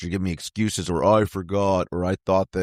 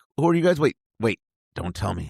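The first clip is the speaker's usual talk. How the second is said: put-on thrilled, eager, fast and swooping; 3 semitones higher than usual. Retelling how a festival owner greeted the band: imitating excited speech. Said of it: "One of the owners was super excited".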